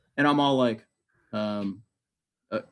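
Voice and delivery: ordinary talk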